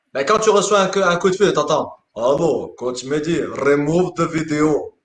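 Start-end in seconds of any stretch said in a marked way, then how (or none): 2.1-4.8 put-on menacing killer's voice with a Russian accent. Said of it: "d'un homme avec l'accent russe".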